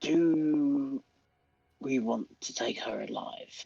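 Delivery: soft, hushed, put-on whisper. Playing Pizzazz, asking the group a question: whispering in character. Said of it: "Pizzazz is gonna whisper to them".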